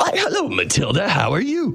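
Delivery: high, silly, hammy showman voice.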